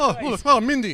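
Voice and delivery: shrill, booming, high, loud, drawn-out scream. Doing a tied-up scream bit from a skit: Robin Williams impression. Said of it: "That's my Robin imper-, Robin way".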